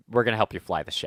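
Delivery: ordinary delivery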